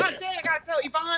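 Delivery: ordinary talk, nothing marked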